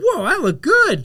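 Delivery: high, slow, amazed, delighted gasping exclamation. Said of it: "And then I was like".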